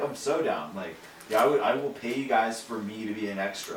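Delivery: ordinary talk, nothing marked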